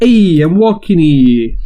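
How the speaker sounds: loud, high-pitched put-on Italian American accent. Taking a turn after the other speaker's bit, in an Italian American accent. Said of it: "now you do yours".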